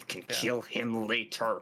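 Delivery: hissing voice. Player voicing a character's line in the game, hissing. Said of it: "He just hisses out".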